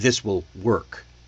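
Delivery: "work" said with falling pitch, firm low finish.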